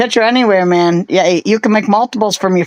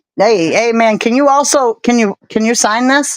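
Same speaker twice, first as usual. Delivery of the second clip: ordinary talk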